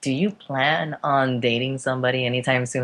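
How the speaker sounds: usual speaking voice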